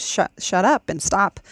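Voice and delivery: plain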